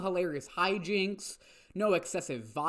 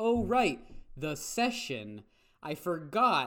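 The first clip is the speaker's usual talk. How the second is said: ordinary talk, nothing marked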